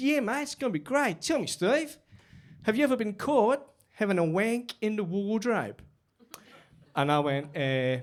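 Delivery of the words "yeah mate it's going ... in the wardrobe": put-on Australian accent, pitched up. Retelling what an Australian colleague said when they met: imitating Shane's Australian accent. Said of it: "That Australian accent's".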